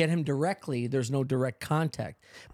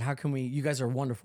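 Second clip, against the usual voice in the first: usual speaking voice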